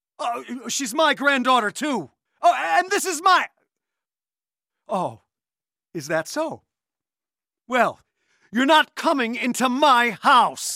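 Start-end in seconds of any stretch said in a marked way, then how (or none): 7.7-10.8 loud yelling. Telling a caller on the phone to stay away: yelling. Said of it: "You just yelled at the nicest guy".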